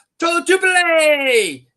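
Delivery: very high, loud, excited shouting.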